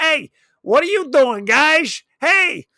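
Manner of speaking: high, loud, affected and drawn-out drawl. Imitating a movie character's odd way of talking: Vinny from Doogie Howser voice. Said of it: "Like he was Vinny from Doogie Howser".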